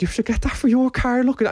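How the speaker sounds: very high, gushing, eager voice. Telling a story about mum showing off the neighbour's car hoover: imitating mum. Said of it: "She's like".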